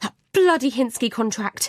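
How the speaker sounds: curt, irritated, angry snap. Reading a story where a caller cuts off a husband: snapping angrily. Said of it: "I snap".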